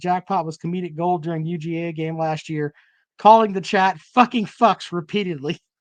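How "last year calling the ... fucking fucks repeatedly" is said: ordinary talk, nothing marked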